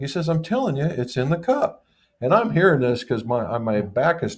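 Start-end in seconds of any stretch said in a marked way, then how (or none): 0.3-1.9 casual, nonchalant offhand tone, higher pitch. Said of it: "in the most nonchalant method".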